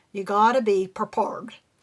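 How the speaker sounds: put-on, rural Southern US dialect. Saying the lesson's title line aloud, imitating Bill's Southern redneck dialect. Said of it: "we say it in his dialect".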